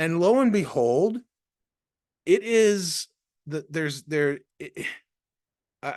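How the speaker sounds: stuttering, tripping over words, halting restarts. Telling a story that still blows their mind, stuttering. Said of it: "I'm just I'm stuttering".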